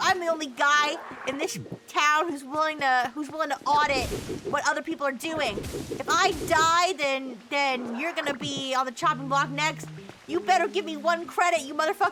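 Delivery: normal talking voice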